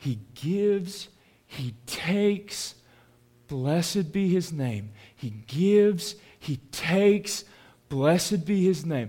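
soft, hushed, close half-whisper. Retelling a weeping mother's words at her husband's deathbed: imitating a half-whisper. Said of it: "she whispers".

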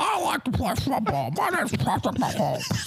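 squeaky, high puppet-like voice.

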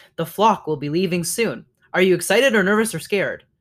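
ordinary delivery

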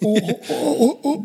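mock stunned, very high little oh, like shocked gasp. Retelling meeting a legend who greeted him, acting out a shocked gasp. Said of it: "Like I was like in shock".

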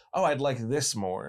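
ordinary talk

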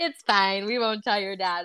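normal talking voice

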